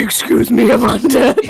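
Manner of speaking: loud, confused, bewildered talking-bear voice. Voicing a confused character in a dramatic fan fiction reading: Corpse impression. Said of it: "Do you have a better corpse impression?".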